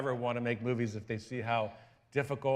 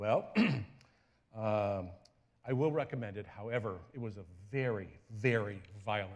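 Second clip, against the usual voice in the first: grave, serious man's voice, words weighed carefully; 4 semitones lower, 3 dB quieter than usual. Retelling what a pastor said after watching the movie: imitating Pastor Chuck seriously. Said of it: "serious man that he is, he says".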